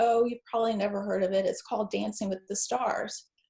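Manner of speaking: normal talking voice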